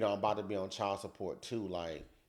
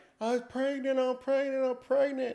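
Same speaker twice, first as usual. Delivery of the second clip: mock sobbing cry, very high wail; 6 dB louder than usual. Retelling how she came out waving the test: imitating someone crying. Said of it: "crying like".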